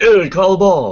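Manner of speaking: high, loud yell. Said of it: "and I yelled at him".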